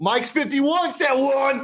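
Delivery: acted, very high, very slow, drawn-out scream. Imagining Anthony Totri at quarterback calling a play: imitating Anthony Totri screaming. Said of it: "out there screaming".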